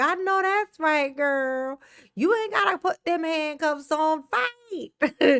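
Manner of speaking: slow, egging-on hype cheering voice. Imitating Trina cheering on bad behaviour: imitating Trina hyping. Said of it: "she gonna be like".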